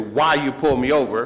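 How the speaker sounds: ordinary talk, nothing marked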